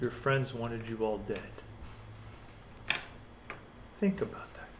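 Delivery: soft, breathy whisper, very close. Describing a scene to a player, a man pulls them close and speaks, whispered. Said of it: "he whispers to you".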